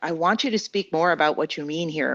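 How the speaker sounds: plain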